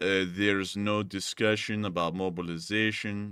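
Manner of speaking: mock lifeless, flat, unenthused monotone reading. Reading a statement in the same voice he uses: mock-unenthused reading. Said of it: "I'm gonna read it in the same unenthused voice that he does".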